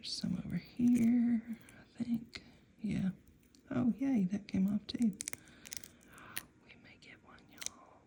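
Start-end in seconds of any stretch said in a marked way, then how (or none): 3.7-8.0 quick, breathy whisper under the breath. Carefully peeling plastic off something while talking to viewers, whispering. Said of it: "I'm whispering like this is like diffusing a bomb".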